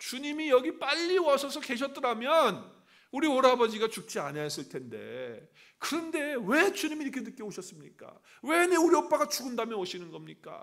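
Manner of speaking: high, loud, resentful reproachful tone. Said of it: "마르다가 예수님을 향해서 원망합니다".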